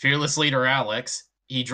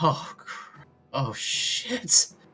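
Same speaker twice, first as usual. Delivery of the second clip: high, hushed frightened gasp. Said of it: "all he can say is".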